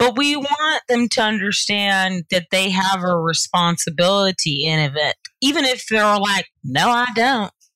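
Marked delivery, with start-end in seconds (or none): 6.6-7.5 put-on Georgia-style Southern accent. Imitating people who deny having a responsibility: southern accent. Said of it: "I just use a Southern accent".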